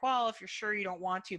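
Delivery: ordinary talk, nothing marked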